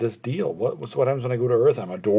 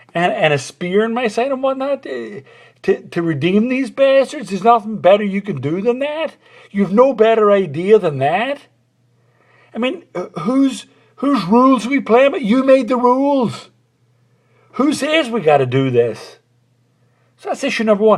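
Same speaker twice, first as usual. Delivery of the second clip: very high, loud, indignant, stammering slangy rant; 9 semitones higher, 7 dB louder than usual. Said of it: "I'm your son, / [name]'s like".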